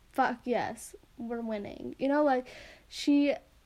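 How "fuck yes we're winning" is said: soft, mock smug gloating with smirking glee. Retelling how someone smirked while talking about the case: imitating a smug, smirking tone. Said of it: "She says that with a little smirk, being like".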